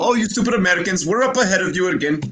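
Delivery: fake, put-on Indian accent. Imitating Europeans teasing Americans about a vaccine: put-on Indian accent. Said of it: "why did he have an Indian accent".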